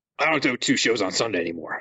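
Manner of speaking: loud monster truck rally announcer voice. Trying a Beetlejuice bit during a Harry Potter plug, failed Beetlejuice impression. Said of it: "That's just a monster truck rally guy".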